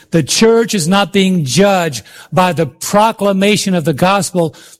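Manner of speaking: slow, measured, leaning on "church".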